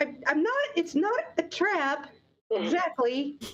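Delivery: squeaky character voice. Narrator voices a stranger addressing the players, in a squeaky voice. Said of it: "has kind of a squeaky voice and says to you".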